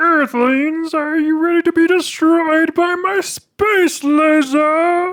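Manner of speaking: very high, shrill space-villain voice, "laser" stretched out. Asked to do a Marvin impression for the group: Marvin the Martian voice. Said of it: "Can you do a Marvin for us?".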